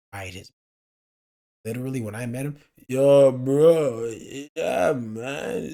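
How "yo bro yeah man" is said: put-on very slow, slurred drawl, "bro" dragged out. Retelling meeting a man whose brain was fried, imitating a slow, slurred voice. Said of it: "just very slow, slurred his voice".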